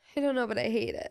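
voice that sounds near tears, like crying. Speaker asking another person to make a bad feeling stop, sounding like crying. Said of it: "it sounds like I'm crying".

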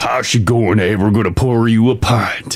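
low, vague non-American accent drifting into Southern American. Reading out what the role calls for, demonstrating a vague non-american accent. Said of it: "that got a little American. That got a little Southern".

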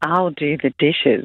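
sultry whisper. Answering a request to whisper it sexy: sexy whisper. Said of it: "can you whisper it for us, sexy?".

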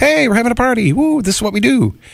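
high, excited, whooping delivery.

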